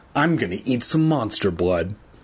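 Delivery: ordinary delivery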